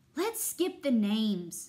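loud, whining, complaining tone. An oboe character complains during roll call; whining. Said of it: "whined Oboe".

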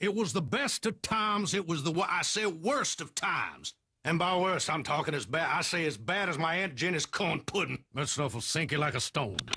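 very high cartoon rooster voice. In a Geico ad, narrating a classic novel opening as a book narrator: Foghorn Leghorn voice. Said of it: "Would Foghorn Leghorn make a really bad book narrator?".

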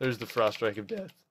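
cracking voice. Narrating a game to viewers as a strike lands: voice cracking. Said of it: "Did the voice just crack right there?".

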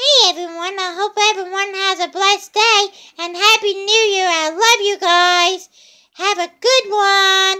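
very high-pitched, loud cartoon voice. Voicing a SpongeBob pillow speaking to viewers: SpongeBob voice. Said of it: "SpongeBob wants to say something to y'all".

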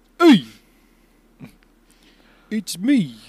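exaggerated, laid-on Brooklyn accent. Discussing casting, speaker voices Sanji as a suggestion; Sanji with Brooklyn accent. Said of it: "with Brooklyn accent".

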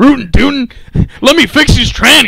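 very high, loud cartoon voice, hollered. Joking that the other speaker is a biker Yosemite Sam: Yosemite Sam voice. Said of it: "You're like a biker version of Yosemite Sam".

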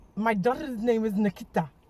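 poor, bad put-on South African accent. Urged to go on, attempting a South African accent: bad South African accent. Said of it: "She's trying to do a South African so bad".

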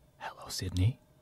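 breathy, very soft, low creepy whisper. Performing a line on request after a lost bet: creepy Ghostface voice. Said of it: "let's hear the creepy voice".

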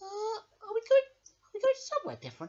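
squeaky, very high little puppet mouse voice. Voicing Handy Mouse greeting George: Handy Mouse voice. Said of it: "let's get Handy Mouse to come up here now".

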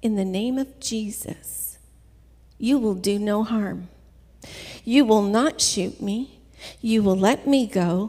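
acted-out calm delivery, not yelling. Recalling facing armed assailants, retelling speaking calmly. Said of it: "very calmly just said".

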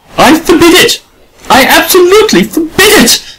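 very high-pitched, stormy, storming outburst. Narrator voices Adela answering the artist Ashley, storming. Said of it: "stormed Adela".

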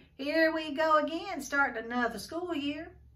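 jaunty tone. TJ swings into step with Stacy at the start of school, jauntily. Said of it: "said TJ jauntily".

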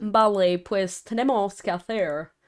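Spanish spoken with American accent. Asked to speak Spanish with an American accent, speaker obliges. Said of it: "start speaking Spanish with an American accent".

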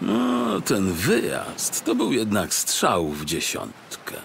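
pleased, satisfied, contented muttering. A narrator voices the detective settling onto a lounger: muttered contentedly. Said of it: "Mruknął zadowolony detektyw Ząbek".

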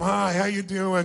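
bored, dismissive tone. Demonstrating how to greet someone tiresome, as if it's a total waste of time. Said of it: "walk up to them like it's a total waste of your time".

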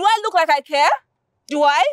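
shouting. Woman told at his office that her man drove out with a lady: shouting. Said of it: "stop shouting".

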